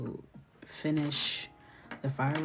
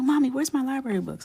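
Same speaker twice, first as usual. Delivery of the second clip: put-on very high, loud, cross, demanding little boy voice; 10 semitones higher, 8 dB louder than usual. Retelling how her son asks for his library books: imitating her son, annoyed. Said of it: "he gets so mad".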